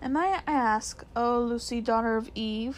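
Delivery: plain reading voice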